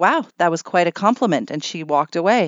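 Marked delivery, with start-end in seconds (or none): none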